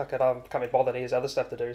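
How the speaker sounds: ordinary talk, nothing marked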